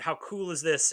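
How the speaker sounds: ordinary talk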